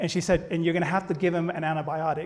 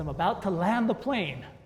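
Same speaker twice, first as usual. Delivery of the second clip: ordinary talk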